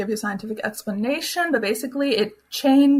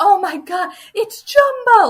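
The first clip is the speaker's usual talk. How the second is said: very high, slow, thrilled and excited gush; 10 semitones higher, 7 dB louder than usual. Describing people who see jumbo, imitating excited visitors. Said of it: "They're like so excited".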